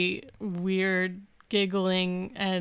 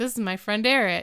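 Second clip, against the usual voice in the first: usual speaking voice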